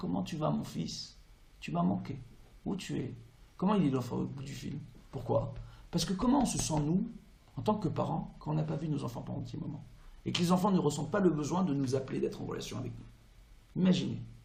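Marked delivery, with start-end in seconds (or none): 0.0-3.1 small, soft, put-on little voice. Speaker acts out a mother phoning her long-silent child: imitating a mother's small voice. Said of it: "elle prend une petite voix".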